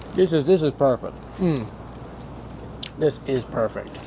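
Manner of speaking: talking with mouth full. Tasting a sandwich, the speaker keeps talking with mouth full. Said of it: "I know I shouldn't be talking with food in my mouth".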